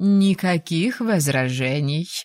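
plain reading voice

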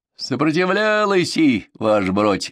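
joyful, delighted, high-pitched cry. A member of the capture team reports to the narrator, joyfully exclaiming. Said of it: "радостно воскликнул".

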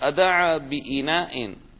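usual speaking voice

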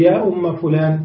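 ordinary talk, nothing marked

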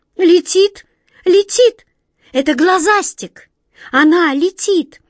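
very high, horrified cry of terror. A character suddenly cries out in horror. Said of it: "вдруг в ужасе вскрикнула Ниточка".

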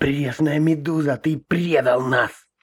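high, hissing voice through the teeth. A man thrown onto the deck hisses up into the captain's face, hissing. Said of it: "прошипел в побелевшее лицо капитана".

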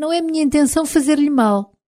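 quick falsetto voice. Narrator reads her own words to the man whose wound she stitches, falsetto voice. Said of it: "Garanti-lhe com voz de falsete".

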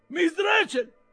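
bellowing, roaring shout. Reading a novel aloud, the fat boy yells into the old lady's ear, roaring. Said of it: "Ruggì il ragazzo grasso".

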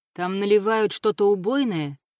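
ordinary delivery

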